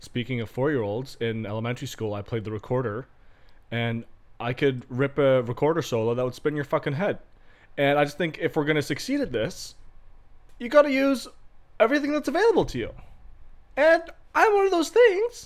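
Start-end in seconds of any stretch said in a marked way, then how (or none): 7.8-15.5 voice climbing into very high register, loud. Talking with the others about how to succeed, voice getting higher. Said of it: "why is your voice getting higher?".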